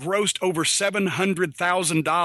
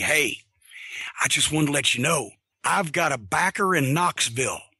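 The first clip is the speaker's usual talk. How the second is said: put-on whisper, lower; 3 semitones lower than usual. Retelling how someone came over to share a secret: imitating Tim Horner whispering. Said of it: "came over and whispered to me".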